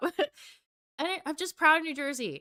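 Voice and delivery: emotion catching in throat. A speaker talking about pride in their community, choked up. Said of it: "now I'm getting choked up".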